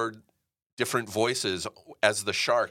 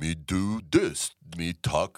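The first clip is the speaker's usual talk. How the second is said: deep, low, dragged-out, extra-slow drawl; 5 semitones lower than usual. Showing the voice used for the whole movie: slow Stallone voice. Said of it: "my best Stallone".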